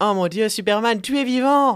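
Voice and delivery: high-pitched, overjoyed, thrilled and astonished. Retelling a Superman comic to a friend, imitating Lois Lane's joyful surprise. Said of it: "imitating Lois Lane's joyful surprise".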